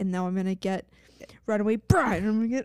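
fierce, ferocious, fired-up, all-in delivery. Picturing a character grabbing films in a video store: imitating a ferocious character. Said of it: "ferociously in this Blockbuster".

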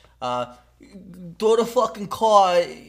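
loud Bronx accent. Doing an accent for others to guess, in a Bronx accent. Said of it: "It's Bronx".

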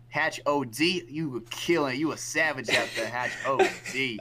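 put-on New York accent. Speaker quotes a teammate who kept cheering him on, in a new york accent. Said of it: "he would be saying his New York accent".

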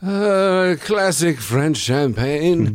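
put-on very slow, high, drawn-out drunken drawl. Imitating Orson Welles drunk while recording an advertisement: imitating drunk Orson Welles. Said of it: "And he's drunk".

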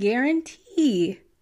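cracked voice breaking partway through the phrase. Discussing a teen's murder trial, voice cracking. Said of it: "my voice cracked".

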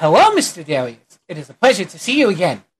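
put-on cute little cat boy voice. Voicing a magistrate officer greeting an adventurer: adorable little cat boy magistrate voice. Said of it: "the adorable little cat boy, uh, magistrate officer".

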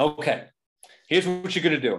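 loud, barked-out yelling. Retelling what he yelled at a player during one game, retelling someone yelling. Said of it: "he was yelling at him".

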